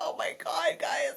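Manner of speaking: play-acted teary, weepy, breathy, half-whispered gush. Retelling getting emotional at work after clinching playoffs: retelling being weepy. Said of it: "I was so weepy".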